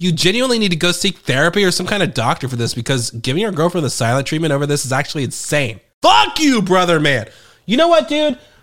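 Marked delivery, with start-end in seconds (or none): 6.0-8.4 yelling at a much higher pitch. Speaker excited to be back on the microphone: yelling into the microphone. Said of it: "stop fucking yelling into the microphone".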